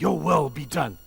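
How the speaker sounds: openly defiant, loud, rebellious tone. Demonstrating one way to say a phrase to God, defiant and rebellious. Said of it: "of active rebellion".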